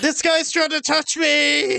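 acted high, shrill shriek. Playing a character who alerts the party, screaming in character. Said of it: "That's what my character just screams out".

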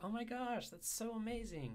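very high, swooping, over-the-top exaggerated niceness. Demonstrating exaggerated kindness through intonation, much higher pitch, wide range. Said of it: "where I'm speaking in a much higher pitch than I normally would and exaggerating the distance between my highest and lowest pitch points".

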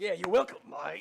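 high, rough, creaky, rasping voice. Playing the resident animal expert explaining Rwandan wildlife: Steve Irwin impression. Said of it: "That's a really good impression".

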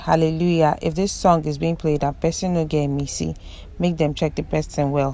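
plain

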